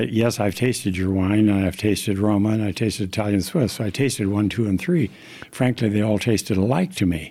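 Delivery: ordinary delivery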